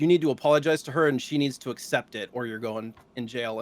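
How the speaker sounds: ordinary delivery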